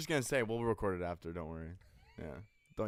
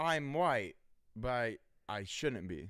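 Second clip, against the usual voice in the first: imitated South African accent. Asked to do an accent for an acting test, the speaker uses a south african accent. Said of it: "Can you do a South African accent?".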